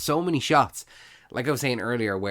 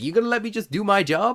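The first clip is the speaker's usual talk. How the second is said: mock shout, shrill and very high pitched; 10 semitones higher, 3 dB louder than usual. Retelling how a police officer answers Spidey: imitating someone shouting back. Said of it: "she's shouting back".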